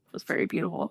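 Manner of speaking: soft, choked-up whisper, fighting back tears.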